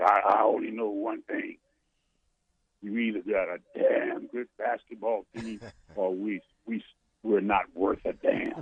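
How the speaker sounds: low growling voice. Retelling what his basketball coach told him, in a growly voice. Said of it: "he had that growly voice".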